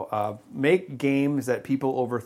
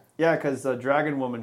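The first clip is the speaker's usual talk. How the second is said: ordinary delivery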